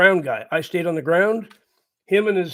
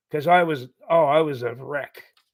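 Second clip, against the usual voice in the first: ordinary talk, nothing marked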